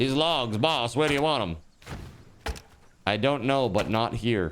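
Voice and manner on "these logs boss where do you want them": put-on faster old-time 1930s beat reporter voice. Acting out workers talking to their boss, in a 1930s beat reporter voice. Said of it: "they sound like a beat reporter from the thirties".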